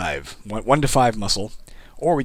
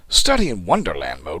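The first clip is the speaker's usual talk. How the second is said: affected, put-on British accent; 3 semitones lower, 3 dB louder than usual. Reading a game mode name aloud: british accent. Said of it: "Why do I have a British accent?".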